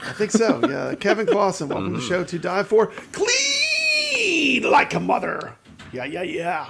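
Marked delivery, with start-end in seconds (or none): 3.1-6.7 put-on pirate voice, very slow and swooping. Host follows a guest's welcome to the show with a tagline: pirate voice. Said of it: "You just did that like a pirate".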